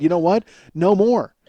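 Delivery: ordinary talk, nothing marked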